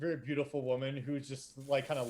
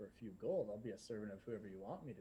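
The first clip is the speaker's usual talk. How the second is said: very hushed, low, seductive and flirty voice; 4 semitones lower, 12 dB quieter than usual. Voicing a woman across the table who leans forward: flirty woman across the table. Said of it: "she leans forward and says".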